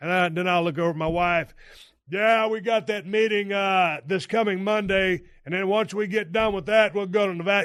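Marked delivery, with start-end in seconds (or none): 2.1-7.7 put-on chatty, half performed, loud talking. Retelling talking loudly to keep a sleepy driver awake: imitating own loud talking. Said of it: "You start loud talking".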